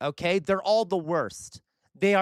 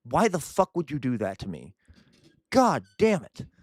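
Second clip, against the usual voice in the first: fed-up, furious, infuriated outburst; 3 semitones lower than usual. Reacting to a video of puns the community sent: infuriated. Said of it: "I'm infuriated".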